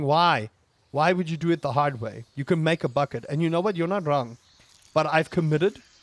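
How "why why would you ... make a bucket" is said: plain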